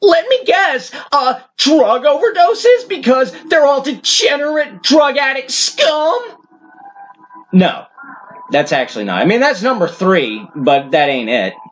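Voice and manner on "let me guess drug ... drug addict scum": very high, condescending, obnoxious know-it-all vlogger voice. Mocking guesses about the top cause of death: obnoxious John Doyle-style only-idiots-would-argue voice. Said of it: "I'll do it in that obnoxious, uh, only idiots, uh, arguing, could possibly argue with me voice that a lot of vloggers, including John Doyle, likes to do".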